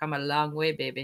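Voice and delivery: put-on Austrian accent. Repeating an old saying the way Arnold would: Arnold Schwarzenegger Austrian accent. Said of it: "We can say it like Arnold Schwarzenegger right here ... in his uh, Austrian accent".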